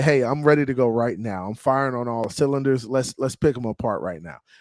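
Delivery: normal talking voice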